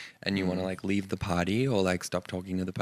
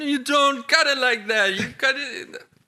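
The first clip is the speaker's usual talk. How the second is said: put-on very high, slow, disapproving scolding grandmother voice; 8 dB louder than usual. Talking about deboning chicken thighs the wrong way, doing a grandmother impression. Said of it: "That's my impression of someone's grandmother".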